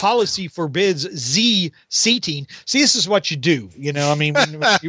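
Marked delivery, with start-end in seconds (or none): 0.0-2.5 slow, fake French accent with z for th. Retelling a comic's french waiter turning away a guest: put-on french accent. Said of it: "trying to make somebody have, like, a French accent".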